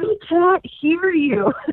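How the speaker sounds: mock, very high, slow, drawn-out yelling call. Retelling a spectator in the top row during the interview: imitating someone screaming. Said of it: "and they're screaming".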